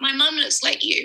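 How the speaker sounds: crying through the words. Telling someone they look like her mum: tearful, pausing to cry. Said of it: "she's paused to cry here".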